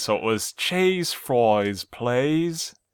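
put-on poor English boy voice. Reading out a misspelled menu card, sounding like a poor english boy. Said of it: "You sound like a poor English boy".

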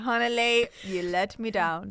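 exaggerated upper-class posh accent. Speaker imagines what her mom will say to her; imitating Bevy, extra posh accent. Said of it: "I do an extra posh accent when I do my mom's voice".

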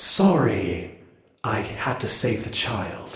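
cool, windy put-on voice. Speaking in character after saving the child: cool wind voice. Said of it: "your cool wind voice".

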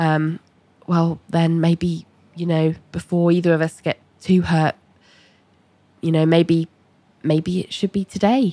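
quiet, small voice. Retelling John's reply to her, in a small voice. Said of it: "John says in a small voice as well".

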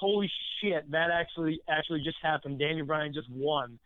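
ordinary delivery

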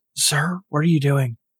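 quiet character voice, away from the microphone. As Kaizoku, turning to the player, away from the microphone: very quiet. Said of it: "like just very quietly away from the microphone".

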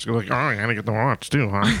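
put-on puppet-like voice. Retelling someone who gave him a hard time about his watch, Muppet-like imitation. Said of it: "Is that what they sounded like? [name]. Like a muppet".

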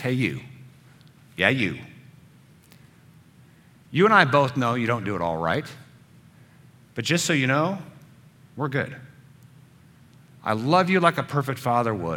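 put-on whispered divine voice. Speaking as God into the listener's ear: voice of God whispering. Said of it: "I'm gonna be the voice of God whispering in your ear".

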